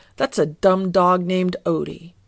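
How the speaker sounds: plain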